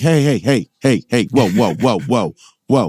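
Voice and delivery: sitcom cartoon father voice. Quoting Peter Griffin from Family Guy while talking to a co-speaker, in a Peter Griffin voice. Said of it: "I'm quoting Peter Griffin from Family Guy".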